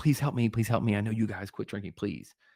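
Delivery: rushed, desperate, repeated pleading and begging. Recalling begging sober crew members on tour for help: retelling desperate pleading. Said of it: "And I'm like".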